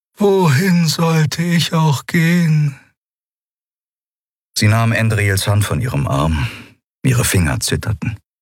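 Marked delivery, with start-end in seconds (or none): 0.2-2.8 bitter, slow and pitched up. Narrator reads a woman answering another woman's plea not to leave her, bitterly. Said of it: "Und bitter fügte sie hinzu".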